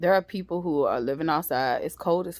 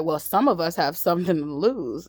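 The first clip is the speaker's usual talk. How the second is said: ordinary talk, nothing marked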